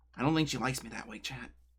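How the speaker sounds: whispering. Telling chat an aside about a teammate: whispering. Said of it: "I don't know why I whispered that".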